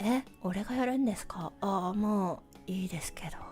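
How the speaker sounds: very low, very quiet, listless mumble. Describing a story's protagonist who doesn't seem like a lead, mock-listless downer young man. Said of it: "超ダウナー系男子のローテンション".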